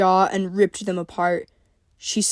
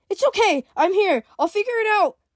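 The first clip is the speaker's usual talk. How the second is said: very high soothing tone with panic breaking through; 12 semitones higher than usual. Reading a story where Summer comforts the wounded April: soft but panicked voice. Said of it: "she said softly, trying to hide her panicked voice".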